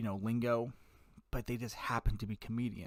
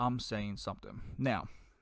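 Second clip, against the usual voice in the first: plain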